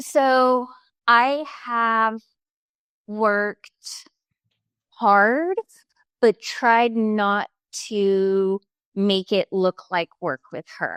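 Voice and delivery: moved, emotional, speaking very slowly. A parent, asked how they raise their daughter, answers while emotional. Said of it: "I'm going to get emotional".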